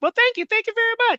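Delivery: very high, squeaky little voice. Retelling Serrano thanking a stranger who praised his watch: imitating Serrano's high-pitched squeaky voice. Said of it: "high-pitched, squeaky voice".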